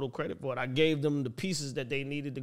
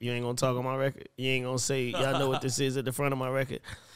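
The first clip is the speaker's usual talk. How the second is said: ordinary talk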